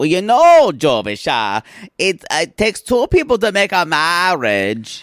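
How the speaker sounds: put-on Cajun accent. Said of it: "I'm never gonna stop doing this accent".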